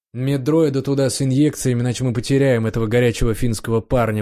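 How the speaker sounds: ordinary delivery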